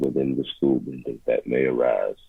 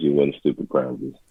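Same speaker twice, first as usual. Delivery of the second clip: ordinary delivery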